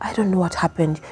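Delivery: hushed, very quiet, barely-there voice. Showing how someone feeling shame answers questions, in a very soft voice. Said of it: "your voice tends to be very soft".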